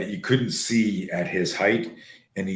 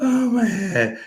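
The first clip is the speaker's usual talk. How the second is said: mock very high, drawn-out, swooping wail; 13 semitones higher than usual. Speaker retelling Nick's reaction after getting hurt: imitating Nick wailing. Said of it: "he's wailing like like as if I had just beat him".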